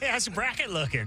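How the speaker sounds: put-on American accent. Mocking how people at the tournament come up to you, in a fake American accent. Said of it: "That's him trying to talk like an American".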